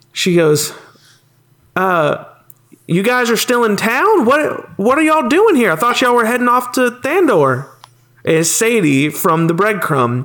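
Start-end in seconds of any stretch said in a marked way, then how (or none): 1.7-7.7 high shout carrying across a distance. Game master voicing a familiar character who spots the party leaving the hospital, Sadie shouting to friends. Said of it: "hear a familiar voice shout at you guys".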